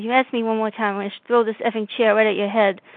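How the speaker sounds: ordinary talk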